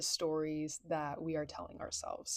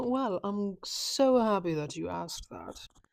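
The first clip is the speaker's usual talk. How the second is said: loud, put-on British accent; 2 semitones higher, 6 dB louder than usual. Answering their own question in an episode, in a put-on British accent. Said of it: "I continue to implement this British accent".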